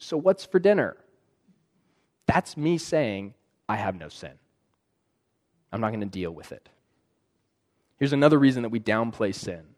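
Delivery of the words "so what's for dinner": bright, breezy, high, chipper cheerful voice. Coming back into the room minutes after storming out, most chipper, cheery voice. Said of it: "in the most chipper, cheery voice".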